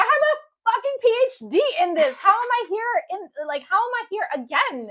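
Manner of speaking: play-acted very loud, very high, shrill furious rant. Retelling what they say about their own track record: imitating own angry outburst. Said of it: "it just angrily sometimes".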